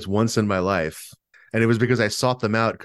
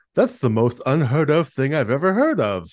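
guessed-at cartoon monarch voice, swooping pitch; 3 semitones higher than usual. Quoting a cartoon king's catchphrase found on TV Tropes: King Leonardo voice. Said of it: "I'm just going to guess at the voice here".

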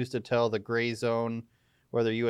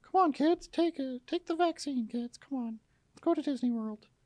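put-on cartoon mouse voice. Doing a kid-friendly mouse bit urging kids along, in a Mickey Mouse voice. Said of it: "It's my working Mickey Mouse impression".

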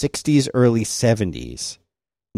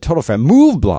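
stress on "Move"; 2 semitones higher, 5 dB louder than usual. Quoting how she said the blog's name, stress on 'Move'. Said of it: "she put the emphasis on Move".

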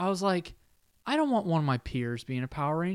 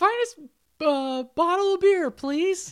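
put-on little-boy voice, much higher, louder; 10 semitones higher, 6 dB louder than usual. In an imagined after-credits scene, the Blue Ranger buys beer in a little boy voice. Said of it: "he still has the little boy voice".

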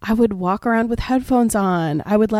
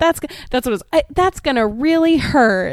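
put-on hurt voice. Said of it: "she said".

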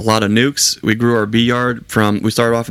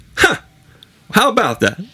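very high, sing-song, swooping put-on voice; 11 semitones higher than usual. Describing watching a boulder roll far down the mountain: Mark Smith voice. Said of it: "in my best Mark Smith voice".

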